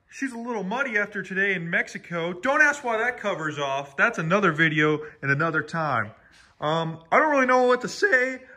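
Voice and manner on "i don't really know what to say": voice cracking high mid-line. Back from a day at the lot, talking to viewers, voice cracking. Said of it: "I got a little voice crack there".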